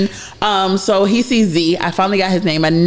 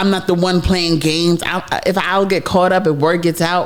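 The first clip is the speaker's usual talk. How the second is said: usual speaking voice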